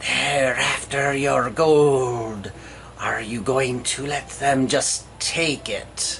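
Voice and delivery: dark, low, hissing whisper, close up. Reading out the Voice of Betrayal's words to the heroes: dark hissing whisper. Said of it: "A dark and hissing voice whispers in your ear".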